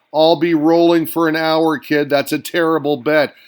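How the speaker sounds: plain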